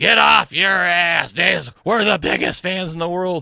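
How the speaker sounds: loud, high, drawn-out top-of-the-lungs scream. Retelling a fan behind them at a game: imitating someone screaming. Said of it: "he was screaming at the top of his lungs".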